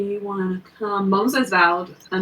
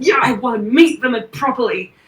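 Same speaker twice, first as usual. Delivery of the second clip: words pushed out through grunting; 4 semitones higher, 4 dB louder than usual. Voicing a character who answers through grunts: grunting while speaking. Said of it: "through, like, grunts, says".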